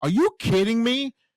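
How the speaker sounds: play-acted sportscaster, stunned and disbelieving, floored. Retelling the announcers reacting to the wrong winner: imitating announcers' disbelief. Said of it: "you can hear the announcers like".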